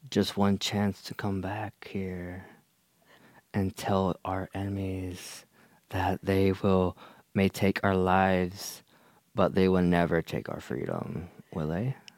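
unsettlingly calm, creepy, eerie tone. Asked to inspire the group, delivering a rousing speech: creepy, calm pep talk. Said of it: "but that was really creepy".

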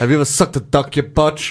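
put-on Sevenoaks accent throughout. Repeating a quoted line while guessing where the accent is from, Sevenoaks accent. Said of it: "I think it's from Sevenoaks".

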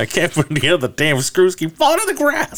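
mock very high, swooping, rising screaming outburst. Retelling a scene where a father struggles with a play set: imitating someone screaming. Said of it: "He's just screaming at him".

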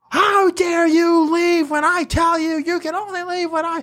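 furious, scolding voice. Retelling how the teacher scolded after class: imitating a furious teacher. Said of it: "She was furious".

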